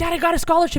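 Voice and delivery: play-acted bursting excitement. Retelling calling dad with news: imitating own excited self. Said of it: "I got so excited. I was like".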